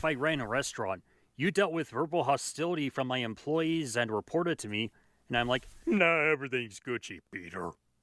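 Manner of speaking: ordinary talk, nothing marked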